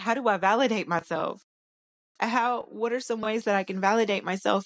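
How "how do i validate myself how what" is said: plain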